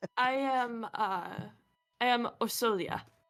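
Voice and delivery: put-on Eastern European accent. A character introduces themself to the others, in an eastern european accent. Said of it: "this character is totally like Eastern European".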